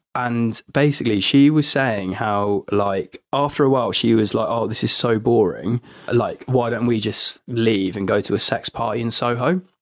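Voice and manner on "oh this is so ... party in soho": ordinary delivery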